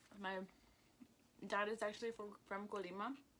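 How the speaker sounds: chewing while speaking, food in mouth. Speaking in a conversation about family, talking while chewing. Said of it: "Sorry that I'm talking and chewing".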